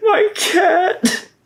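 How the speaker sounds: sad, sorry, forlorn voice, pitched very high. Asked to genuinely try doing sad, the speaker performs a sad voice. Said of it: "Genuinely try to do sad".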